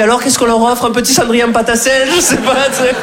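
put-on high eager kid voice.

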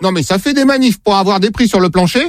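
ordinary talk

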